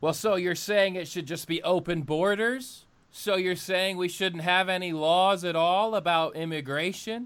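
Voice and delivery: slow, sarcastic delivery. Mimicking a listener who objects to what was just said: imitating a sarcastic objector. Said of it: "I saying that a little sarcastic".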